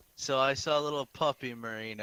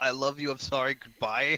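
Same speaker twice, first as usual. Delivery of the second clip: ordinary talk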